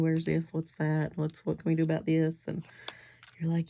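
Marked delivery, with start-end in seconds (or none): none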